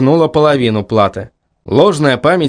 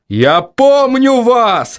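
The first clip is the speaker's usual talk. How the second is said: furious, enraged, shrill yell at very high pitch; 9 semitones higher than usual. An enraged man yells at the young woman who brushed him off. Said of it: "заорал он".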